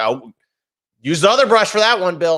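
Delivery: loud, high, mock German accent. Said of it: "the German accent you do".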